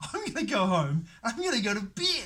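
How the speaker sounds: giggling hysterically through words. Retelling laughing after coming back into the body: retelling hysterical laughter while talking. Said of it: "hysterically laughing".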